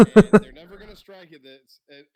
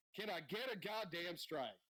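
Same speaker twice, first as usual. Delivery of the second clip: very quiet, held-back put-on yell; 4 semitones higher, 22 dB quieter than usual. Retelling how a pitcher yelled at a teammate: imitating a yell. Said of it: "Glavine turns around and yells at Mark Lemke".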